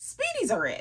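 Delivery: gushing, thrilled voice rising high in pitch. Praising a product she wants personalized, voice going high. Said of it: "how high my voice got".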